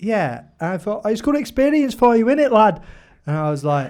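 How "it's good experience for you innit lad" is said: very high-pitched attempt at Scouse Liverpool accent. Retelling a story about a salesman, quoting him in a Liverpudlian accent. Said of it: "I can't really do a Liverpudlian accent".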